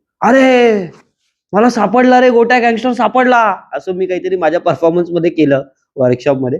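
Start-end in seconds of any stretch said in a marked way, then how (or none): 0.2-3.4 acted sudden shout, much higher, slower. Retelling how someone at the workshop suddenly shouted about his performance, retelling a sudden shout. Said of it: "ते अचानक ओरडले".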